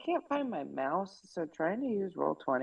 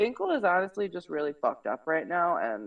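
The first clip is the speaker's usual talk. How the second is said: usual speaking voice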